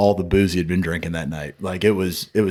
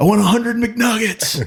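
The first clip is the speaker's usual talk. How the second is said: put-on child scream, much higher and louder; 3 dB louder than usual. Retelling a child screaming an order from the backseat, imitating someone screaming. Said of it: "screaming from the backseat".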